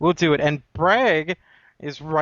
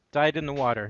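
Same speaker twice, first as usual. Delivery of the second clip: ordinary delivery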